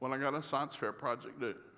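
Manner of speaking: ordinary delivery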